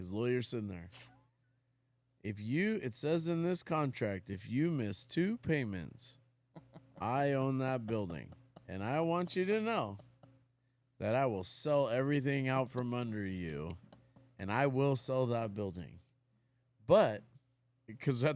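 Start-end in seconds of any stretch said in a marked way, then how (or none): 2.2-16.0 steady, cadenced, rhythmic delivery. Retelling what the seller said at the signing: imitating his cadenced way of talking. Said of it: "he had this cadence about his voice".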